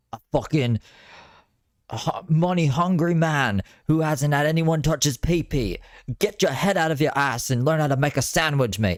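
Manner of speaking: put-on very high-pitched, ranting British-accent tirade. Show how Gordon Ramsay says crazy things like this, in a Gordon Ramsay voice with a British accent. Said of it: "but in a British accent".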